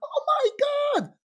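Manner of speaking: high, panicked cry.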